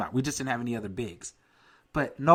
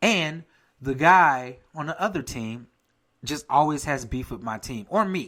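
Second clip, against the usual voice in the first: usual speaking voice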